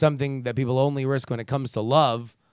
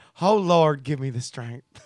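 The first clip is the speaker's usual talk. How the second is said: put-on Southern accent, huffy and effeminate. Reacting to something they just read: put-on huffy southern effeminate accent. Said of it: "in a huffy Southern effeminate accent".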